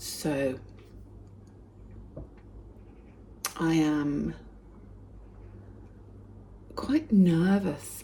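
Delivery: hushed soft whisper. Morning video update while everyone else in the house sleeps: whispering. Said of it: "I'm whispering because everybody else in the house is still asleep".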